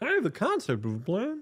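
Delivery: very high, cartoonish voice pitched way up. Quoting a politician's line said exactly like Homer Simpson: Homer Simpson tone. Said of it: "he said it in such a Homer Simpson tone".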